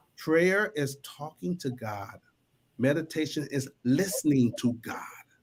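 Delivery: low, hushed half-whisper. A speaker repeating a saying for listeners told to lean in, half-whispering. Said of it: "I'm going to whisper so you can lean in".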